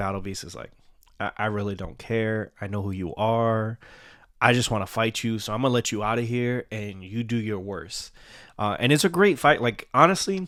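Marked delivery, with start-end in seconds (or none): none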